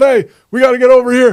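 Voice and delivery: loud, raspy call. Doing an impression of coach Doc Rivers: Doc Rivers impression. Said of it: "my impression of Doc Rivers".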